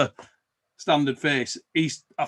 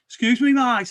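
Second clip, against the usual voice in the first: put-on broad Birmingham accent, laid on thick, higher pitch; 9 semitones higher, 4 dB louder than usual. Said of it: "a really thick Brummie accent".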